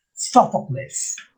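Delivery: first-syllable stress on "Sophocles". Giving the correct pronunciation of a name, stress on first syllable of Sophocles. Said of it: "the accent is on the first syllable".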